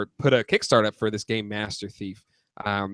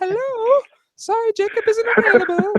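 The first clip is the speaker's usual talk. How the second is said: voice pitched much higher; 7 dB louder than usual. Pretending to be his own secretary: higher secretary voice. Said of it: "me with a higher voice".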